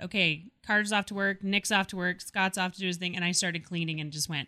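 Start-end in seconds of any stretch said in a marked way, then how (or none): none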